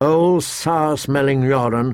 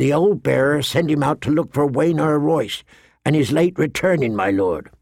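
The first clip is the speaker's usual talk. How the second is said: ordinary delivery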